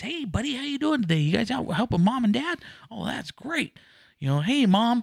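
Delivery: very high-pitched, cheesy, peppy salesman voice. Retelling how a furniture salesman greeted a family, imitating a cheesy salesman. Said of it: "this 1950s stupid, cheesy ice cream salesman".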